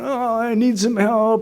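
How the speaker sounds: high, drawn-out, pleading crybaby voice. Speaker acts out how he called his mom asking for help: mock crybaby plea. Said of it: "like total crybaby stuff".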